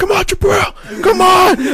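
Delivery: yelled high and stretched out. Speaker recalls his coach's voice yelling in his head; imitating Coach Nord yelling. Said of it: "it wasn't my fucking voice yelling".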